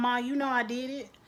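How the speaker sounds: ordinary talk, nothing marked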